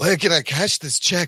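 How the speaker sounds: bad put-on pirate voice. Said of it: "a really bad [name] doing [name]".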